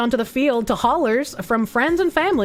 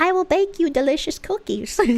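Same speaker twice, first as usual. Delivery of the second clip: high, put-on elderly woman voice; 6 semitones higher than usual. Speaker breaks into a character mid-talk, using an old lady voice. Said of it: "Old lady voice is doing crazy things to me".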